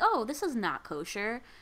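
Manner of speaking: ordinary talk, nothing marked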